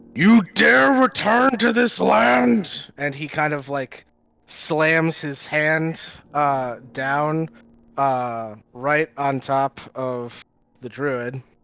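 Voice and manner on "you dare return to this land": very high, rough, rasping, booming godlike shout. Narrating a god who shouts over all the players: booming Pelor shout. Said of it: "you hear his booming voice".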